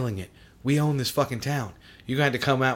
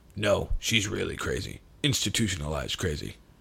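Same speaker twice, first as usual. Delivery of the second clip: very low, rumbling voice; 6 semitones lower, 4 dB quieter than usual. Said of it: "he's got a super deep voice".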